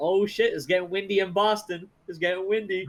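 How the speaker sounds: mock taunting voice. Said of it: "we're like".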